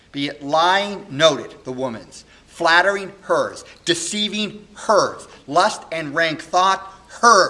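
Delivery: very loud, heartbroken, furious, swooping raging declamation. A young man in a solo Shakespeare monologue speaks, heartbroken and very angry. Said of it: "[name] on learning this, of course, is heartbroken and very angry, / [name] is a young man who was adopted sort of as a baby by [name]. [name]' parents had died, and he's raised by [name], who's the k".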